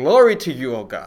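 put-on elderly Greek lady accent. Quoting a woman the speakers call crazy, in an old Greek lady accent. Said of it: "Really, really good accent there".

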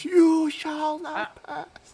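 shrieked scream, very high, slow, drawn-out. Casting a spell in the game as Malak: Malak screaming. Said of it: "Malak screams".

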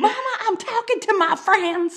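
put-on very high, shrill holler. Retelling Leslie Jordan yelling at his mother: imitating Leslie Jordan yelling. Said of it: "he yells at his mother".

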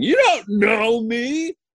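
acted-out shriek, very high and drawn out. Retelling a commercial scene in tidy whities: imitating own scream. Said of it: "and I'm screaming".

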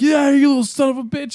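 shrieking yell, high-pitched and loud. Speaker retells a woman at the back window screaming at him, retelling a woman's scream. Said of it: "she just screamed".

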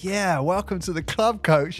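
put-on proud, gloating voice. Retelling a teammate's remark to the coach after a technical foul: imitating a proud teammate. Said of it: "And literally said it like that".

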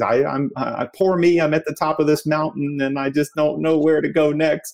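high-pitched, tearful, crying through the words. Retelling what was said in a group turn while crying: retelling own crying words. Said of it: "I'm sitting there crying and says".

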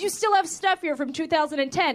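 ordinary talk, nothing marked

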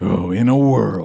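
put-on old-school movie trailer announcer voiceover. Recalling old-school movie trailers, imitating the trailer announcer voice. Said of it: "the voice, like you said before".

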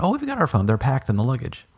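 put-on proud, boastful, high sing-song tone. Retelling what mom said when the speaker pulled over: imitating mom's proud tone. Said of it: "mom proudly said".

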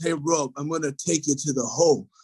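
put-on heavy British accent. Retelling his taunt during an Xbox basketball game, in a heavy British accent. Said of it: "he said in his heavy British accent".

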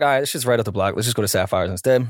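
usual speaking voice

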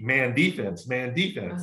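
ordinary delivery

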